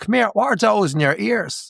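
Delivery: put-on heavy, thick Dublin accent, high-pitched. Speaker imitating the woman scanning their items asking a question, thick Dublin accent. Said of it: "she turns to me in a thick Dublin accent and she goes".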